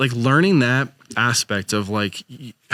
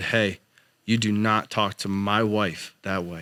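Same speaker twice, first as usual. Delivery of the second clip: put-on stern scolding tone, quieter; 2 semitones lower, 5 dB quieter than usual. Retelling scolding a son who yelled, imitating a stern scolding. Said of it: "And it's stern".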